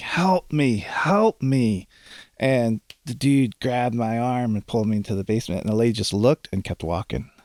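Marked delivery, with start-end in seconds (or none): 0.0-1.9 mock high, very slow, stretched pleading cry. Retelling calling to a lady walking across the street: retelling a scream for help. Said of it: "and I was screaming".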